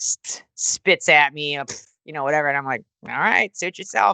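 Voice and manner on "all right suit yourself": ordinary talk, nothing marked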